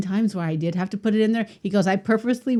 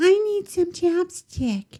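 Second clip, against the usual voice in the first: put-on mocking girly voice, higher pitch; 9 semitones higher than usual. Retelling radio hosts making fun of girls at a game: imitating a girl, mocking. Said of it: "and they did that voice".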